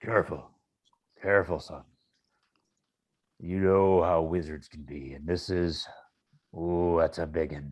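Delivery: very low, deep murmur. Voicing a father warning his son about a wizard: murmuring as Dad Axe. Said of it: "you're getting murmurs from Dad Axe".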